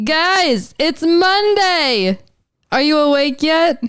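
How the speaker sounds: loud, high yell, "Monday" drawn out. Greeting listeners on a Monday morning, yelling. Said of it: "I'm sorry I just yelled in your ears".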